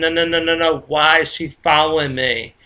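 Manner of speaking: plain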